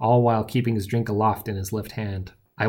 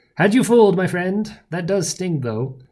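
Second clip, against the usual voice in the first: smiling, grinning, pitched-up delivery; 9 semitones higher, 4 dB louder than usual. A man who faked dying turns to his friend, grinning. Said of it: "a wide grin upon his face".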